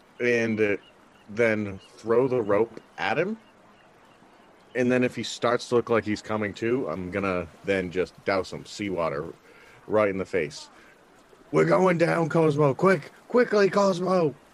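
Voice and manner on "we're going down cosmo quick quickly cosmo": shrill, very high, urgent yelling. Playing a character in a game, urging a companion to hurry; urgent shouting. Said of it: "just start shouting".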